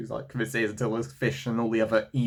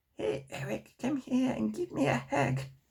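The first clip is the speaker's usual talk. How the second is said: clumsy put-on cartoon granny voice; 5 dB quieter than usual. Describing Cartman's relatives, the speaker does a bad Grandma Cartman impression. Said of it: "So bad impression".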